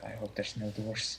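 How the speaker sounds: very hushed, very quiet mutter under the breath. Agreeing to a test to secure a castle, muttering under breath. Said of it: "and I say under my breath".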